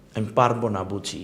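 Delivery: ordinary delivery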